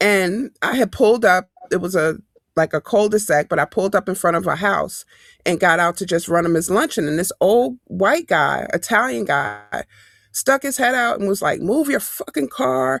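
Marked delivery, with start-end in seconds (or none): 11.6-13.0 put-on furious, high, angry outburst. Retelling an old man who went off at her: imitating an angry outburst. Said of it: "just went off".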